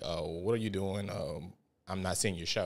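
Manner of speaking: ordinary talk, nothing marked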